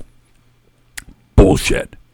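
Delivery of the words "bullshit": low, unvoiced growl. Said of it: "He growled".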